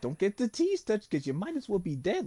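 put-on high, swooping Brooklyn teen voice. Speaker describes the new animated Roderick to a friend; Animated Roderick's New York voice. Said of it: "he literally sounds like he's from New York".

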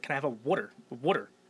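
mock Philadelphia accent. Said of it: "I didn't understand you 'cause your accent".

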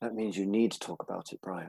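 very soft, quiet, calm counsellor-like voice. Answering brian, who says he is ashamed of talking about shame; put-on therapist voice. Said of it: "I tried to put on my best therapist voice then".

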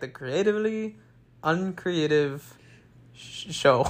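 play-acted, unsure, faltering, stumbling delivery. Imitating the other speaker's show intro: imitating a hesitant unsure intro. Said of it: "it sounded like you didn't know what to say, so you're like".

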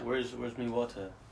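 put-on Jamaican accent. Podcast guest just coming in asks for water; jamaican accent. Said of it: "I just came in with an accent".

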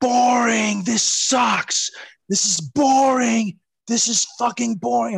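loud, drawn-out, jeering heckling yell. Retelling a wrestling match where Brian heckled over the ropes, retelling Brian yelling. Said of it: "he's like yelling".

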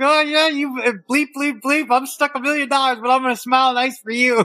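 muttered through clenched teeth. Acting out a losing player waving back at a fan through the glass, imitating someone talking under his teeth. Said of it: "under his teeth, he's going".

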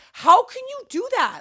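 very high, shrieking scream. Retelling a phone call with a parent, imitating herself screaming. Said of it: "screaming at my mother".

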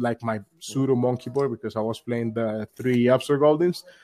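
normal talking voice

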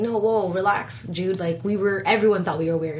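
ordinary talk

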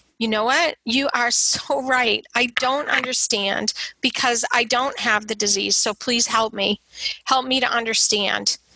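patient, calm tone. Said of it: "calmly and patiently saying".

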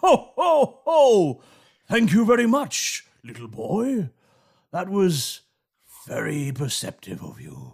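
swooping, sing-song, animated festive storybook character voice. Voicing Santa, who thanks a player for helping: Santa voice. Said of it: "the remaining Santa, he turns to you and he says".

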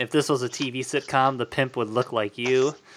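usual speaking voice

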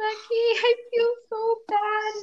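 put-on crying through the words, very slow, tearful. Retelling talking to Becky after starting to cry; retelling crying while speaking. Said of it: "And I just started crying and I was like".

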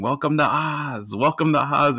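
put-on high-pitched screaming cry. Retelling a wrestler's debut entrance: imitating Kevin Sullivan screaming. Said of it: "coming out screaming".

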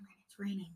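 put-on whisper. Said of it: "He would whisper".

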